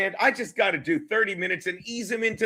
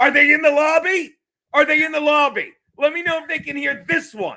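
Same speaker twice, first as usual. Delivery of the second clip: high, loud, hollered yell; 8 semitones higher, 6 dB louder than usual. Retelling calling out during a show about people who walked out: imitating own yelling. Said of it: "I was yelling".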